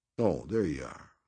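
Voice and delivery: drawling, stretched-out words. Narrating a man rising from his armchair to greet his visitor, drawling. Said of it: "he drawled".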